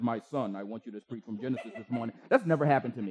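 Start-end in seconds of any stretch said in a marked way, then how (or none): 0.0-2.1 godlike voice, sounding as if over the radio. Joking about God speaking through the radio: James Earl Jones voice. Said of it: "this James Earl Jones voice comes through the radio and says".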